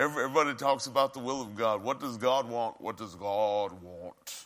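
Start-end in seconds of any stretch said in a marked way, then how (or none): 1.8-4.5 low, put-on pious, churchy tone. Mocking how everybody talks about the will of God, put-on religious tone. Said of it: "Put on the religious tone of voice".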